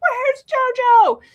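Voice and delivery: very high, loud, frantic shriek. Retelling spotting a fox at night and calling for the cat: retelling a scream. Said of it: "and I screamed".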